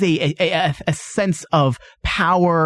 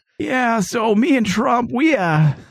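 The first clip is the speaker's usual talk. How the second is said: creepy put-on politician-style voice, higher pitch; 6 semitones higher than usual. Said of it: "this creepy dude in the background".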